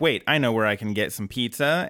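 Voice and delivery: ordinary talk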